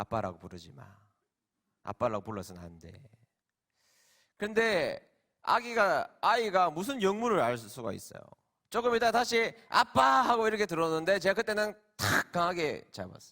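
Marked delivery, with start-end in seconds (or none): 0.0-2.9 very low, hushed, close half-whisper. A father recounts what he half-whispered to his young son who ran to him: retold half-whisper. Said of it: "귓속말로 이야기했습니다".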